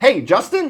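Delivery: upbeat, energetic, enthusiastic, excited voice. Demonstrating a phone call greeting after the other person answers, enthusiastic and excited. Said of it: "it sounds something like this for enthusiasm".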